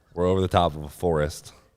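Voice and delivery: ordinary talk, nothing marked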